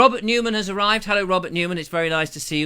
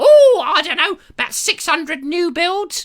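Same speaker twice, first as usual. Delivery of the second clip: put-on screeching woman voice, higher and louder; 11 semitones higher, 7 dB louder than usual. Retelling an invitation from Cynthia, imitating Cynthia's screeching voice. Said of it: "stepped out of a Monty Python film".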